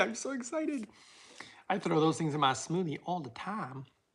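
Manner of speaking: woman's voice with American Southern accent. Wrapping up a video for viewers, talking like a Southern woman. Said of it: "Why am I talking like a woman from the South?".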